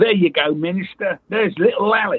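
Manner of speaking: put-on high-pitched London barrow boy street trader voice. Retelling a stuntman's line during a film take: imitating a barrow boy voice. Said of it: "talking like a barrow boy".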